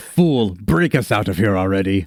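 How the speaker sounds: weary, annoyed groaning character voice. Voicing a sentient sword speaking in a hero's mind: groaning sword voice. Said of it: "the sword groans and says".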